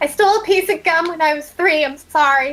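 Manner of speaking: calling out loudly. Voicing a character who confesses to the group about stealing gum: shouting out. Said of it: "Rosalie just shouts out".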